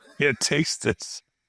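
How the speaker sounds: high, slow, drawn-out mocking tone. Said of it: "I go".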